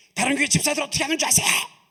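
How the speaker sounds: high, fast, complaining grumble. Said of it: "제가 여러분들 막 원망해".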